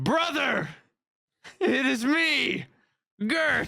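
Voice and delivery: high, screaming yell, projected across a distance. Playing a character in the game, calling out to a brother: screaming. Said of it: "I scream".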